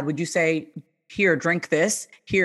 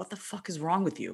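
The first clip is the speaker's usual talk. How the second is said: quieter, acted, mock-harsh scolding tone; 3 semitones lower, 8 dB quieter than usual. Speaker acts out how she used to talk to herself, acting out harsh self-scolding. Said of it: "I would just kind of be harsh with myself".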